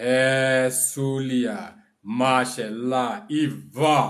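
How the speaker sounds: chant-like intoned delivery. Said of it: "that's how you say it".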